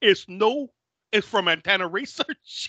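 put-on northern England and New York accent. Retelling what a man said, in a northern england accent with new york thrown on. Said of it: "Northern England accent and then trying to throw New York".

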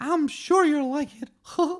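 loud, very high pitch. Acting out Eric Cartman meeting Mickey Mouse; do a Mickey Mouse voice. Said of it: "when Eric Cartman met Mickey Mouse".

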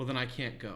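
acted, very nice, mild, calm, even-tempered voice. Retelling what one of the group said while planning a trip, very nice calm voice. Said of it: "in this very nice calm voice and goes".

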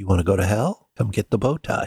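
put-on demonic, hellish voice. Retelling what the hand said, in its demon voice. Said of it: "in its demon voice was like".

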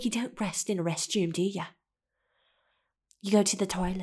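put-on, attempted British English accent. Quoting what he'd say back to her, in an attempted British accent. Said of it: "I don't know if that sounded like UK".

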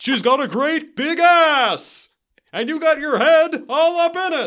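badly done celebrity voice, very high, shrill, ass stretched out. Quoting a movie line after mentioning an audition: not very good Ray Romano impression. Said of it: "It's not even a very good Ray Romano impression".

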